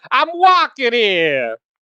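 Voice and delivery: shrill, squeaky, very high and loud outcry. Imitating a player from Jersey, as heard on Discord: imitating Johnny Merps.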